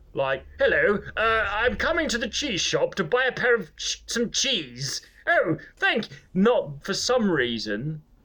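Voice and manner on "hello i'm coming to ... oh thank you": put-on hammy, pitched-up, old-fashioned stock character voice. Insisting their show isn't improv, mocking the voice improv people do, in a hammy improv-sketch voice. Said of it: "we all have to do that voice".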